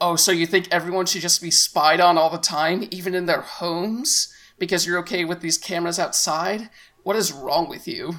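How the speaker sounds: ordinary delivery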